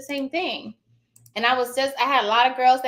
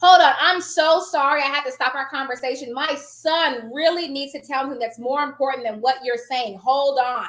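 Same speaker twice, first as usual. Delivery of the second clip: plain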